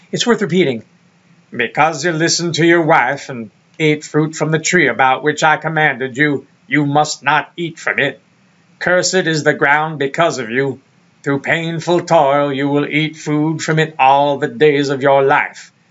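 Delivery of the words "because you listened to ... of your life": put-on godlike narrator voice. Rereading the scripture passage as God, imitating Morgan Freeman. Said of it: "me doing Morgan Freeman".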